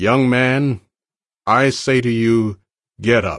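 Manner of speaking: loud voice with full commanding authority.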